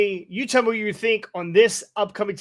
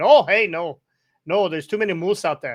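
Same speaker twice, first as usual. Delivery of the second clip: bad, fake, put-on Canadian accent. Retelling what someone said, quoted in a bad Canadian accent. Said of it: "in his Canadian accent".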